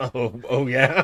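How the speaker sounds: words said with a light, amused chuckle. Reacting in character to the idea of a stealth tactical poncho: chuckling. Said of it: "she chuckles at the idea".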